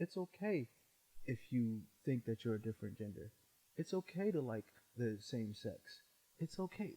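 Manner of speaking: hushed, very quiet, very soft, low murmur. Imitating a guy who pops up on a kid's screen at three a.m.: very soft voice. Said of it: "Very soft voice".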